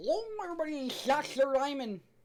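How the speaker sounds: high-pitched put-on voice, lisping on every s. Doing his Doctor Diamond impression with an added lisp: lisping Doctor Diamond voice. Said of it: "I like giving Doctor Diamond a fucking unnecessary lisp. That's my Doctor Diamond impression".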